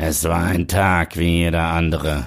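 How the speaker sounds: cheesy eighties German movie-trailer narrator voice. Demonstrating for a conversation partner what you mean, in an 80s trash voice. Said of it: "Das ist diese 80er-Jahre-Trashstimme".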